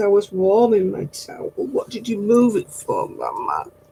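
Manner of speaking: voice given to a dog. Voicing the dog's complaint about the moved towel: voicing the dog. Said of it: "He says".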